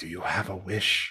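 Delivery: whispering character voice. Voicing a character who asks a player about a wish: Mushu whispering. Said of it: "Mushu whispers to you".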